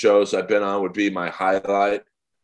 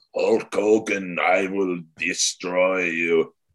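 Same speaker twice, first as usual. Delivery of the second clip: put-on slow, drawn-out Russian accent. Retelling a wrestler's old Russian persona: Nikita Koloff's Russian wrestling voice. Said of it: "spoke in that hammer and sickle".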